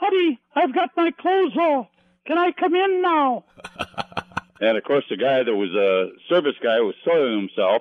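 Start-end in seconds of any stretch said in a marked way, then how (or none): 0.0-3.4 very high-pitched put-on falsetto voice. Retelling him calling from the bathroom while a man served at the desk, high voice. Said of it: "I'd hear this high voice".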